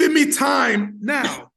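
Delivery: bad fake Jamaican accent. Speaker demonstrating a phrase to the other speaker, bad put-on Jamaican accent. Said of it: "I'm gonna give you a little Jamaican accent here".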